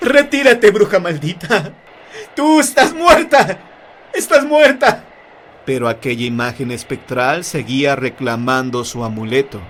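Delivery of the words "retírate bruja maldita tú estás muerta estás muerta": very high, loud, terrified shriek. Reading a ghost story aloud, the character fears for his life: terrified shout. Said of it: "temiendo por su vida gritó".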